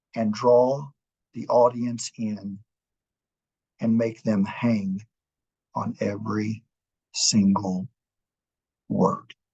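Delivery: deliberate, measured, halting delivery, slow and low, controlled. Giving advice on drawing an audience in, in a slow, low, controlled voice. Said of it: "slow down the pace and speak in a lower tone, a more controlled voice ... You see what I did there?".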